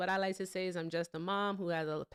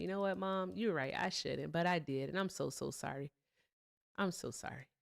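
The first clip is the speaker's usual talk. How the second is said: mock apologetic put-on tone; 2 semitones lower, 4 dB quieter than usual. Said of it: "And I'd be like".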